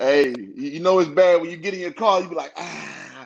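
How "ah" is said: put-on very quiet, hushed elderly groan or grunt. Retelling getting into a car: old person grunt. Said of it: "that old person grunt".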